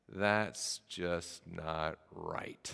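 very quiet, slow, drawn-out mutter under the breath. Retelling what a friend said in the school parking lot: muttering under breath. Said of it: "under his breath said".

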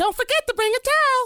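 very high, loud, stoned-sounding drawl. Showing off which impressions you can do after Mr. Hankey, do a Towelie impression. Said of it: "I can do Tally, too".

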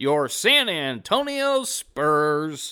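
stadium PA announcer voice, stretched very slow. Talking play-in matchups, doing an arena pa announcer impression. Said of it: "Trying to do my best imitation of their PA guy".

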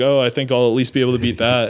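ordinary delivery

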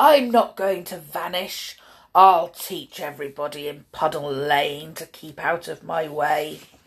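low, vicious, growling monster voice. Narrating the story, the Gruffle talks to himself after the gate soaks him, Gruffle's growl. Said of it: "he growled to himself".

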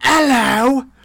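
pure Cockney accent, very high-pitched and loud. Joking about doing a voice, greeting in a cockney accent. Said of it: "I'll speak in pure Cockney".

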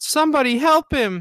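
put-on tiny child's very high, shouted yell. Retelling yelling as a little kid in a quiet theater, imitating a child yelling.

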